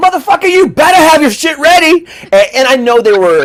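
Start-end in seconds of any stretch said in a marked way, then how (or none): 0.0-2.1 mock, high-pitched, loud hollering. Retelling how the women behind the counter cussed at customers: imitating women yelling and cussing. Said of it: "they were yelling, hollering, cussing at all of us".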